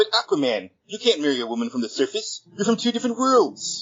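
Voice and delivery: very high, swooping, sing-song gushing voice. Podcast cold open, in a Comic Book Guy voice. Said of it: "how well I can channel comic book guy".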